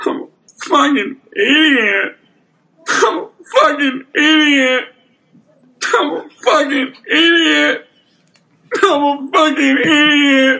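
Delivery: put-on blubbering, very high sobbing, wailing voice. During a game, doing an impression of a character: imitating a character crying. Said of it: "Crying, snotting in a car".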